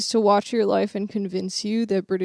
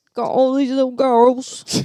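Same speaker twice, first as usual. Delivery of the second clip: mock Australian accent in a put-on man's voice; 4 semitones higher, 5 dB louder than usual. Mocking a man the speakers are discussing, in a put-on australian accent. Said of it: "I can't do an Australian accent".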